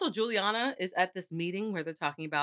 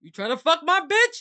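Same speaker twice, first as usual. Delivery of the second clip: very loud, shrill, accusing yell; 10 semitones higher, 9 dB louder than usual. Voicing a jealous character from the book, a put-on Sebastian voice. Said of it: "It was the voice for me".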